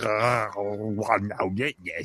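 low, croaky, frog-in-throat voice. Retelling how an actor suddenly switches voice: Emperor voice with a frog in the throat. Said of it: "I put a thro-, a frog in my throat".

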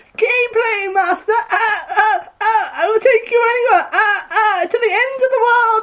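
very high-pitched put-on dolphin voice. Asked to do the dolphin voice, the speaker performs it: dolphin voice. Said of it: "doing your dolphin voice".

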